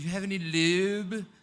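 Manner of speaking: put-on horrible, creepy British accent. Retelling how a roommate woke her at night, in a horrible, creepy British accent. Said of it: "horrible, creepy British accent say".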